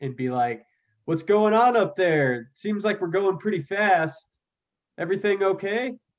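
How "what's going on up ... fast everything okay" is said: loud, high-pitched shout. In a game, yelling up to the constable while the thing falls apart. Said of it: "I'm gonna yell up to Constable Bippers".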